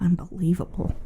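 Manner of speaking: low-key mutter under the breath. Listing ways people show they're mad, the speaker demonstrates muttering under breath. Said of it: "the low key under your breath".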